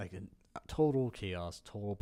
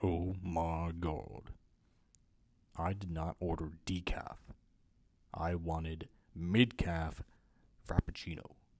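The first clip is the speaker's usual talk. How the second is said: light, drawn-out put-on voice; 2 semitones lower than usual. Trying out voices, complaining about a wrong coffee order, light voice. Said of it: "My my light voice is not very good".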